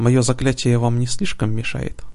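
ordinary delivery, nothing marked

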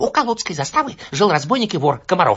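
rushed, hoarse voice, pitched very high. A narrator reads a boy jumping in front of him, telling his tale in a hurried hoarse voice. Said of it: "торопливо рассказывал хриплым голосом".

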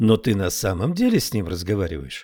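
plain

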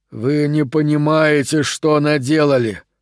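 groaning. A man cradling an infant speaks to those around him, groaning. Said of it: "простонал он".

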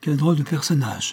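sighed words. A young girl hears the witch describe the heir to the throne, sighing. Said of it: "soupira la jeune fille".

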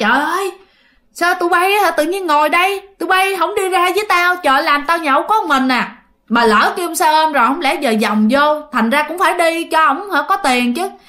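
high, loud, angry scolding rant.

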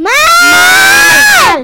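loud, high-pitched shout. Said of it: "Vale, no grites".

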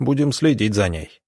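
plain reading voice

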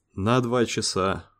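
softly spoken. Lemon answers Dave's question, looking up from an indicator; said quietly. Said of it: "тихо сказал Лемон".

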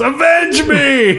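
sudden very high, slow, drawn-out yell.

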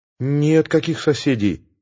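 ordinary delivery, nothing marked

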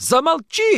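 very high, piercing, shrill shout. Varya, pressed with questions about Derkach, shouted. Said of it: "закричала она".

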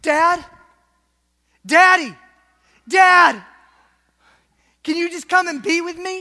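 very loud, high calling cry. Retelling Jesus on the cross calling for his father: imitating Jesus crying out. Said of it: "Jesus is crying out".

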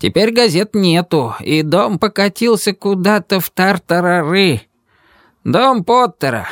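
put-on high, contemptuous, scornful old-timer voice. An old man explains the building to a visitor looking for Pickering; contemptuous. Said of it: "пояснил он презрительно".

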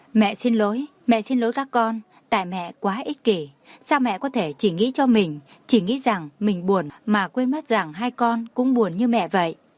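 ordinary delivery

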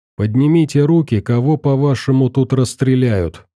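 ordinary delivery

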